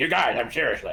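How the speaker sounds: acted cartoon child voice. Correcting the other speaker about whose voice it was: Cartman voice. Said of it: "it's Cartman going like".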